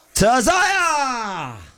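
voice cracking with excitement. Announcing the winner and congratulating Zaya, voice cracking with excitement. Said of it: "My voice cracked there because I'm just as excited".

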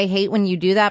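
plain

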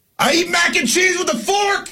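shouting. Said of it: "He's like".

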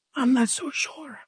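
soft, hushed whisper. Acting out a caller phoning police about gunshots: acting out a whisper. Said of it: "But you are whispering".

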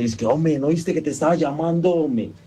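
mock scared, flustered, startled outburst. Retelling confronting the other guy after being startled, retelling a scared, flustered outburst. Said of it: "así todo asustado, azarado".

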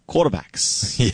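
put-on Cajun accent. Quizzing Spur, saying the word as Jimmy Himes would: Jimmy Himes Cajun accent. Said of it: "as the great Jimmy Himes would say with his Cajun accent".

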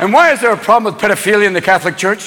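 ordinary talk

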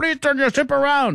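very high-pitched, put-on Indian accent. Quoting audio of the Iranian Navy warning ships, put-on Indian accent. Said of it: "I don't know why that's an Indian accent".

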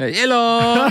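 fake, botched Portuguese accent. Told to greet someone's mother in portuguese, the speaker says hello in a very bad portuguese accent. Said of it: "saying the word hello with a very bad accent".

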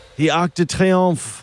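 put-on French accent. Asked a quiz question, repeating the landmark's name: french accent. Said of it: "don't do the accent".

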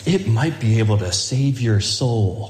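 smooth, deep baritone commercial announcer voice. Recalling an old car ad, the speaker imitates the Volvo commercial announcer voice. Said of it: "the announcer's got this smooth baritone voice".

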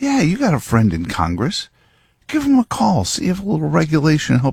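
high, tempting devil voice. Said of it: "he's whispering in your ear".

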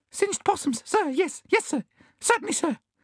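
very high, shaking, gasped trembling words. A bandicoot answers a questioner, gasping and trembling violently. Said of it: "gasped the bandicoot, trembling violently".

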